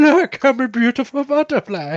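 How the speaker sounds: very high-pitched animated cartoon caterpillar character voice. A parent doing the voice they often do for their daughter, A Bug's Life caterpillar impression. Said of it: "do an impersonation of the caterpillar from Bugs Life".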